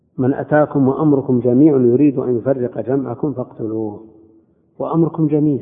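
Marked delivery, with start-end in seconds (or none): none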